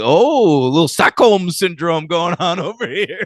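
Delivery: smarmy, high-pitched voice. Retelling a movie scene where a scientist mocks hostages: smarmy Doctor Colin voice. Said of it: "the smarmy scientist guy comes in and he's like".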